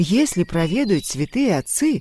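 plain

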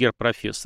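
ordinary delivery

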